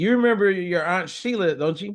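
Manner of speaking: mock sarcastic needling. Retelling what the speaker's mom said about an aunt, imitating her sarcasm. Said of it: "being sarcastic".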